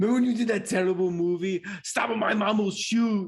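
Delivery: put-on movie-star voice with a taunting tone. Retelling a comedian's podcast bit, quoting the host: Arnold Schwarzenegger impression. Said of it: "what does Arnold Schwarzenegger say".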